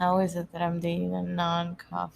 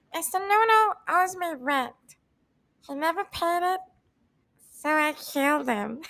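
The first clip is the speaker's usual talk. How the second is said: very high puppet voice, pitch way up; 10 semitones higher, 3 dB louder than usual. Doing a bit as Elmo about Mr. Noodle, in an Elmo impression. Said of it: "me doing the Elmo impression".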